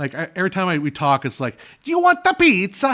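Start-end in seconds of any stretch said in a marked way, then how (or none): 1.8-3.0 exaggerated, over-the-top Italian accent, very high, loud. Making fun of an Italian friend when they talk: exaggerated Italian accent. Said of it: "I always just go over the bo- top with the Italian accents".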